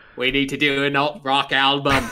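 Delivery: put-on New England accent. Speaking about doing an album: JFK impression. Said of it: "J F K".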